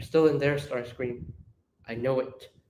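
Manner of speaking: tender, soft, quiet, gentle voice. Acting out Alexis reaching Starscream: soft voice as Alexis. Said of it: "Alexis softly goes".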